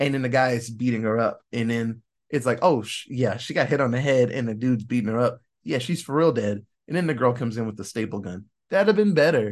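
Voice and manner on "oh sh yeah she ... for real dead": usual speaking voice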